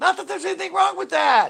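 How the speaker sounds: very high, loud sitcom comedian voice. Showing off his impersonations, the speaker does a high-voiced Seinfeld impression. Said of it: "That's my Seinfeld impersonation".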